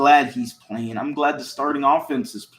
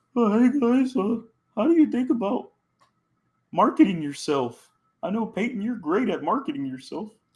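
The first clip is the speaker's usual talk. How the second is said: little, pitched-up, high puppet voice; 7 semitones higher than usual. Acting out a quarterback's question to two others, in a little Kermit the Frog voice. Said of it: "Little Kermit the Frog voice there".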